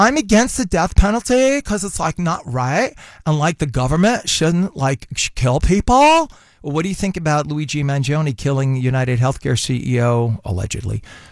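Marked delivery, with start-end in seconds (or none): 0.0-6.3 put-on young trendy voice. Imitating a Gen Z liberal: imitating a Gen Z speaker. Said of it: "that's my interpretation of a Gen Z".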